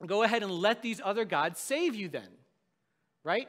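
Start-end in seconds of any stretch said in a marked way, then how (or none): 0.1-2.3 loud, heavy, pointed sarcastic brush-off tone. Retelling God's words to the Israelites: retelling a sarcastic remark. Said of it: "God is very sarcastic in this".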